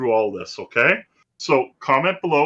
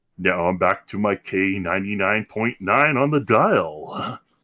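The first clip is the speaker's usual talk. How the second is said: low, on-air radio station announcer voice; 5 semitones lower than usual. Talking about his odd-sounding mic, slipping right into his radio voice. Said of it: "I go right to my radio voice".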